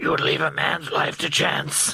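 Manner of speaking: rough, gravelly superhero voice. Quoting a film scene in the Batman voice. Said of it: "maybe the Batman voice is crap".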